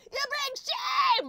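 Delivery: screaming, very high and very loud. Imitating the uncle of a terrorist: imitating the uncle screaming. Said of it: "I just love how he's screaming everything".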